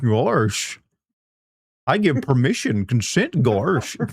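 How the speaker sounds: slow cartoon voice, stretched out, swooping up and down. Joking about a cartoon character giving permission: Goofy voice. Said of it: "now it's just turning into Goofy".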